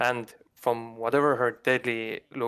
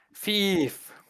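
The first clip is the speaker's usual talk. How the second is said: shrill, screeching, crazed shriek; 9 semitones higher than usual. Voicing a crazed woman bursting through a mirror: crazed woman yelling. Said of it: "and she yells".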